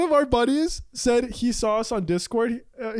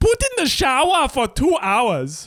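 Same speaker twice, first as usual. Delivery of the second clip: put-on botched, barely German accent; 2 semitones higher, 5 dB louder than usual. Joking about a chatbot's baking instructions, say it in a bad German accent. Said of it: "I don't even know if that was a German accent".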